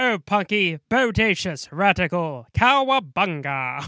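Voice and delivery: put-on loud, old movie-star transatlantic accent. Describing how a man in the 80s talked, doing old Hollywood talking. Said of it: "like he's old Hollywood talking".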